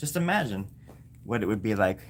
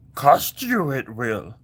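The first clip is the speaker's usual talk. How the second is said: put-on wise creature voice, higher and louder; 3 semitones higher, 6 dB louder than usual. Playing Santa and asking a price, slipping into a Yoda voice. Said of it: "You just turned into Yoda".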